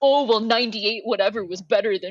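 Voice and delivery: mocking, chatty, annoying put-on voice. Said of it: "fuck that shit".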